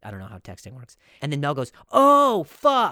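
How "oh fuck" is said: mock very high-pitched, loud, startled blurt. Retelling a text message: imitating Mel, first attempt. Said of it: "Not like that".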